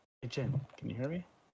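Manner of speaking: soft half-whispered voice. Leaning his head toward the wall to call to Jin, half-whispering. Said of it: "He like whispers through".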